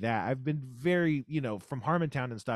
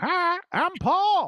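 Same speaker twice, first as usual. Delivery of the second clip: very high-pitched, loud cartoon voice; 7 dB louder than usual. Imitating a three-eyed animated monkey from a studio production card: Paul the monkey voice. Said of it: "he would go".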